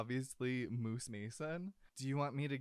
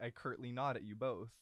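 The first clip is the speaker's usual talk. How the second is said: ordinary talk, nothing marked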